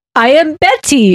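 mocking, put-on foreign-sounding non-American accent. Retelling how one woman spoke, making fun of her: mocking a woman's non-American accent. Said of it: "making fun of 'cause she was like".

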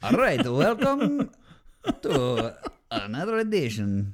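put-on loud, swooping, laid-on Eastern European accent. Podcast host restarting the show intro after being told he sounded Russian, in a Borat voice. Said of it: "I am now just Borating it".

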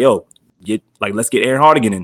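plain

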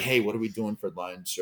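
furtive, sneaky delivery.

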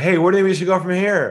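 upbeat, quick, high-pitched, full of lift. Demonstrating the contrast to a calm open-ended question, upbeat, high-energy delivery. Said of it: "There was no up energy".

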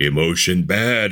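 put-on monster voice. Talking about men and emotional vulnerability, the speaker briefly puts on a Frankenstein voice. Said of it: "I'm going to put on my Frankenstein voice here".

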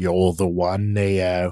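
mock Australian-accented villain. Answering a suggestion to do Agent Smith with an Australian accent. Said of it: "Agent Smith with an Australian accent?".

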